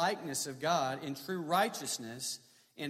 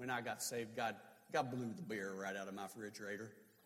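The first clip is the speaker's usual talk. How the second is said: put-on Texas drawl, lower and quieter; 7 semitones lower, 9 dB quieter than usual. Retelling what a man in the Bible Belt said, imitating his Texas drawl. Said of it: "he'd say in his Texas drawl".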